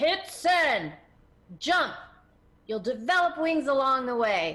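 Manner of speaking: very loud, booming, urging tone. Retelling what a man said on the phone before hitting send, retelling a booming shout. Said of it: "he boomed it in my ear".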